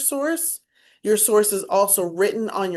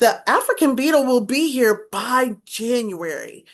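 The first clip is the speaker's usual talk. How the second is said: lively, expressive, swooping rise-and-fall intonation; 2 semitones higher than usual. Explaining that speech should not be monotone: varied expressive inflection. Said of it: "you should have inflection in your voice. ... See how my voice sounds different?".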